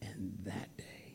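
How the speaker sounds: slow, soft, hushed whisper.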